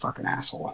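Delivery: muttered under breath. As a character starts up the Sky Cycle and leaves, mumbled under breath. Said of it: "mumble under my breath".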